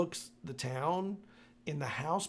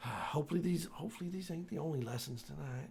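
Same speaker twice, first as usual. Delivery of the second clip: put-on drunken whisper, quieter; 7 dB quieter than usual. Voicing a character starting the car: drunk whispering to herself. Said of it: "She just whispers that to herself".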